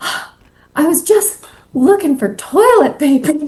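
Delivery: very breathy, airy, high-pitched voice. Retelling a scene partner's line in a stepmom scene: imitating Beth's breathy voice. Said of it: "she very breathy goes".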